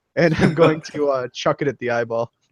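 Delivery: ordinary talk, nothing marked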